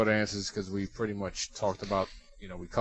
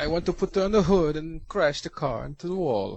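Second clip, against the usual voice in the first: very poor, high, fake put-on Kazakh accent; 7 semitones higher, 4 dB louder than usual. Show how not to talk like Borat, doing a very poor Borat impersonation. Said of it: "a very poor impersonation of Borat".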